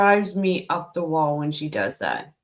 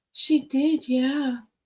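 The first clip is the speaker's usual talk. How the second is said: high-pitched, whining put-on voice; 7 semitones higher than usual. Mimic a woman whose tone drives you mad, imitating a whiny tone. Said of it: "That that whiny tone that she does".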